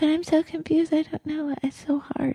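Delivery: high, soft, reluctant, unwilling voice. Telling her audience they all have that voice, demonstrating: high-pitched reluctant voice. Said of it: "it gets kind of kind of high pitched like this".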